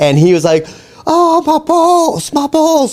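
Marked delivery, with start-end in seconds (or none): 1.0-2.9 very high, drawn-out shriek of pain. Retelling how his dad got hit and yelled in pain: imitating dad screaming. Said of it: "like screaming".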